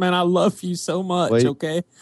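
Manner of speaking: very slow, high, voice catching, fake tearful. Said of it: "I just get choked up every time".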